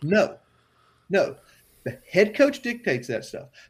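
excited, worked up, swooping pitch. Arguing about who controls the locker room, getting excited. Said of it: "getting a little excited about this".

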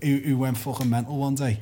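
ordinary talk, nothing marked

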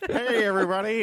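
put-on high little baby voice. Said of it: "a baby Micah voice".

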